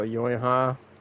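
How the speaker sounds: deadpan, flat, low-key, zero enthusiasm. Showing how they say it without yelling, completely unenthusiastic. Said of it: "I do it completely unenthusiastic and everything. Like I don't yell it".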